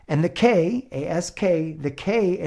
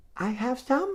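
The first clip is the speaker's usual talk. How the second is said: put-on high, soft, sweet four-year-old voice; 8 semitones higher, 6 dB quieter than usual. Retelling a four-year-old asking a stranger for cheese: imitating a cute four-year-old. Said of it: "super cute little four-year-old".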